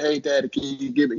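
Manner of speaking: put-on mimicking little baby voice. A father imitating his daughters asking him for something, little baby voice. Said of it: "they give that little baby voice and say".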